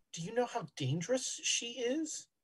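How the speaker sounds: very quiet, hushed murmured aside. As a gentleman approaching Doctor Hollister, speak very quietly. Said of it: "he'll very quietly say".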